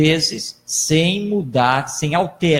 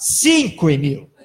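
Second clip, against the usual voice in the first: put-on exasperated, irritated tone with raised voice. Retelling how a man answered when asked to repeat something: retelling a raised voice. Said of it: "já alterando o tom de voz".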